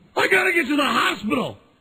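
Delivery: shrill, very high, acted-out screaming. Retelling a car accident panic: imitating own screaming. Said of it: "I'm screaming".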